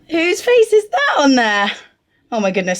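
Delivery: high, squeaky voice, full of excitement. Spotting own face on the feed packaging, squeaky excited voice. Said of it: "I am sounding proper squeaky when I get".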